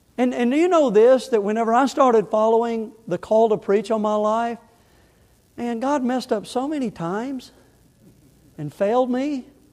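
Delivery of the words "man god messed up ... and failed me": sarcastic, pitched higher. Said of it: "That was my sarcasm".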